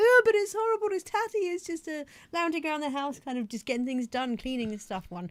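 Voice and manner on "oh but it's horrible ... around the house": very high, loud, flustered, embarrassed fretting. Retelling her own reply to a man who said it would do, high-pitched voice. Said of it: "I don't know why I went so high pitched".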